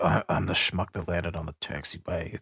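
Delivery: endearing, charming movie-star voice. Retelling an actor's radio remark: imitating Harrison Ford. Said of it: "he's like".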